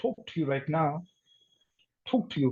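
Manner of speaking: British English accent. Showing learners how a line sounds in an accent: British accent. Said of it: "But in British accent, I may say".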